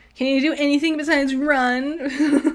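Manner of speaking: put-on whiny baby voice, drawn-out "run". Recapping a show's fight scene, quoting a character: whiny baby voice as Adam. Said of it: "in like a whiny baby voice".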